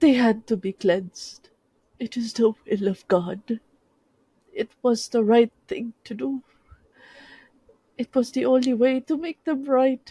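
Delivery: tearful insistence. Garcia speaks to Crisanto in a clearing after the screams end: tearful. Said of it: "No, I have taken the oaths. I have memorized all the catechisms. I have done all the prayers, memorized every saint, every angel. It is not me, it is them. They have been led astray. There is only so".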